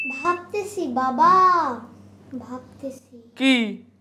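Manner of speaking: put-on bratty, whining kid voice.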